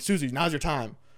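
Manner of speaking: weighty, dramatic, emphatic announcing tone. Retelling the manager calling Susie to the stage: imitating Jack's emphatic call. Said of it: "gives it, like, this emphasis".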